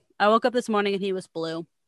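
normal talking voice

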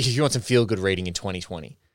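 heavy, deep sarcasm, dripping. Recommending reading to international listeners: deeply sarcastic. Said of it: "I say that with a deep amount of sarcasm".

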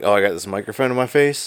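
plain

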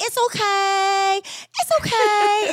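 put-on very high, very slow, cute little kid voice. Retelling what a friend's son always says when something spills: imitating a child's cute little voice. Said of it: "has this cute little voice".

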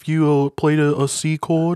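put-on high, loud, chipper voice. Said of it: "Paul, listen".

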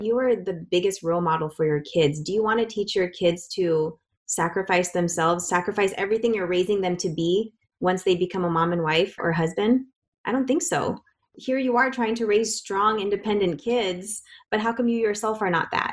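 ordinary delivery

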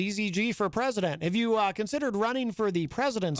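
ordinary talk

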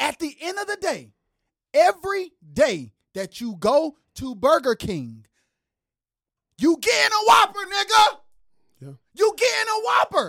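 fired up and heated. Mid-rant, later admitting to being worked up, heated. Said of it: "but i'm hot".

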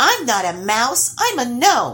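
plain, firm, high pitch. Nils, spotted by the trolls and called a mouse, corrects them, declaring. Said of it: "declared Nils, hands on his hips".

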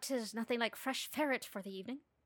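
put-on Irish brogue held throughout. Imitating a woman who constantly tried it, in a put-on irish accent. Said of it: "she constantly tried to do this Irish accent".

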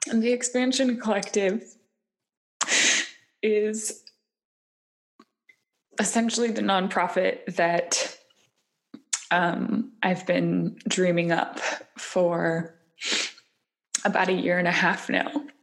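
teary voice, close to crying. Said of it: "apologize for my tears".

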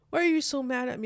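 mock weepy, dramatic, high, tearful voice. Speaker retells their sister asking why they are so mad, imitating sister crying. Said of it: "our sister was crying and being dramatic".

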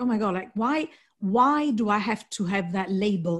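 ordinary talk

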